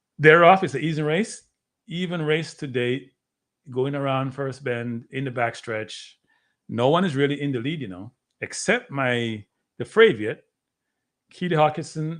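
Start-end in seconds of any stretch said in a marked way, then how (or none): none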